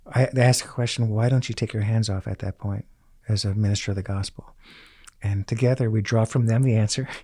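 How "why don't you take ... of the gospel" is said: normal talking voice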